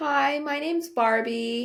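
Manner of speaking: attempted American accent. Trying to show she can do accents: American accent. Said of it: "I can do an American accent".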